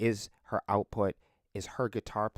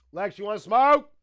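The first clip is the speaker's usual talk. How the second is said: very high, louder, booming yell; 13 semitones higher, 11 dB louder than usual. Calling out to someone thought to be further away: yelling. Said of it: "I don't know why I'm yelling like that".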